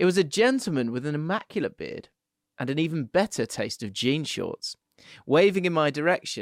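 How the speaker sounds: usual speaking voice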